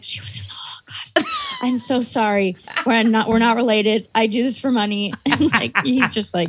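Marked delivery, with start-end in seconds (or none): 0.0-5.1 low, hushed whisper under the breath. Telling how they followed behind her, speaking to others: retelling a whisper. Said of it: "I'm following behind her whispering like".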